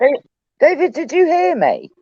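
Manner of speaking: very high-pitched voice.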